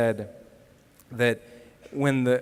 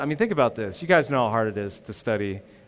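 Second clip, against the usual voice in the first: usual speaking voice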